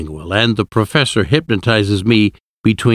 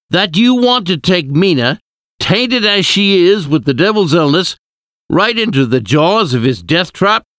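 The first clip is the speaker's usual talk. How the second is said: very high, outraged, angry yell; 9 semitones higher than usual. An angry man objects to the professor's plan, shouting. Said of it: "he shouted".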